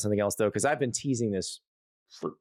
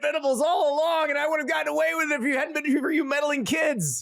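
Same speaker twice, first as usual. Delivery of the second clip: cartoon villain voice, much higher. Joking about Brent Venables, speaker plays an unmasked villain, Scooby-Doo villain unmasked voice. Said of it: "You make him sound like a Scooby-Doo villain".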